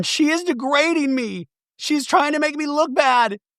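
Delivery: very high, tearful sobbing with crying. Retelling a reality show fight, imitating Angie crying.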